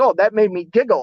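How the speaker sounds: put-on British accent. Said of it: "his accent, the way he said it".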